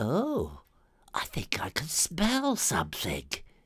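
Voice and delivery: surprised, taken-aback, wondering tone. Reading a story aloud, a character sniffs the cheese and speaks, surprised. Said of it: "The young muss ran at the Robocat. / thought [name]. / The door closed behind the young muss".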